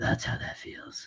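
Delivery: whispered, breathy hero voice. Retelling a movie scene where he is alone on a roof: Batman voice. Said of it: "why are you talking like that?".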